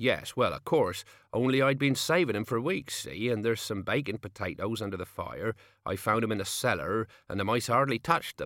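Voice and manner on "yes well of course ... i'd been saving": ordinary delivery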